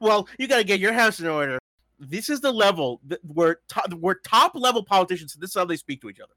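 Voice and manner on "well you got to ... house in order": snarky, catty reality-TV voice, faster. Reading a politician's remark aloud in a snarky Real Housewives voice. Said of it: "I read it with this snarky".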